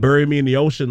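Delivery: ordinary talk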